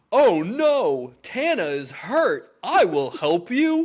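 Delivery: play-acted big, loud, high, very slow voice. Recounting how he voiced a line from the book, doing that voice loud. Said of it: "I can only do the voice he did loud".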